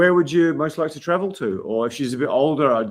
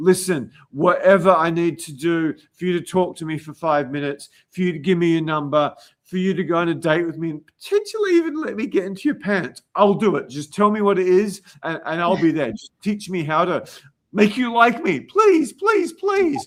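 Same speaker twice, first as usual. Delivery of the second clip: pleading, begging rush of words; 4 semitones higher than usual. Asking a co-host about guys who approach her, acting one out: mock begging. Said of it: "guys come up to you in beggar mode".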